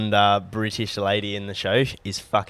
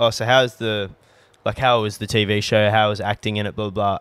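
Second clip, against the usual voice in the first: ordinary talk, nothing marked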